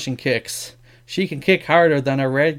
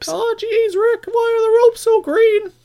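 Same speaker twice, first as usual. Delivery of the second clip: very high, drawn-out, slow cartoon voice; 3 dB louder than usual. Joking about green ring ropes at a wrestling show: Morty voice. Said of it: "There's my Morty for you there".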